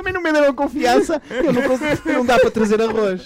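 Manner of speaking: mocking voice, high and loud.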